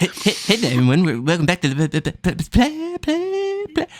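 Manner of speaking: high, stammering voice. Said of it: "that's my favorite impression to do".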